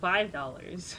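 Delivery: normal talking voice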